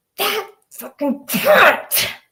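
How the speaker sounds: nasty, mean, high-pitched tone. Showing how a name sounds when said the mean way: mean tone.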